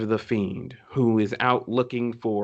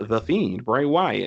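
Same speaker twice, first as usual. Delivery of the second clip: plain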